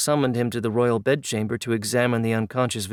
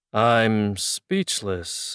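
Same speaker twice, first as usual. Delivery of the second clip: solemn, weighty, grave, very serious. Reading a story aloud, the pharaoh reacts to news: grave tone. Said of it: "in the gravest tone I've ever heard him use".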